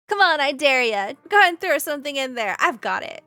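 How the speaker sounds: booming, very loud carnival goblin voice. Voicing a goblin juggler daring a newcomer to throw something: goblin juggler voice. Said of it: "the goblin juggler looks to you and says".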